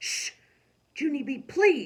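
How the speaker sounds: very high, very loud, frantic, panicked, drawn out. Reading a story aloud, the mother hushes the child: panicked. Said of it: "very panicked".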